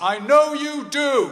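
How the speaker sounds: shrill, very loud, very high voice. Retelling what the speaker's dad said, in a loud voice. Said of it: "in a loud voice".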